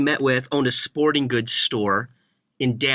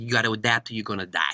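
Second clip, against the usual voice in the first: put-on low voice, heavy New York accent laid on thick; 4 semitones lower, 5 dB quieter than usual. Quoting a man's remark about business, in a thick New York accent. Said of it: "he said it in that thick New York accent".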